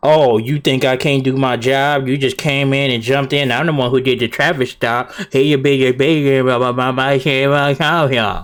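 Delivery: normal talking voice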